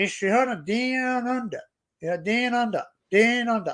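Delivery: put-on Texan accent. Showing how a texan would say the show's name, imitating a texan accent. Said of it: "even the Texan".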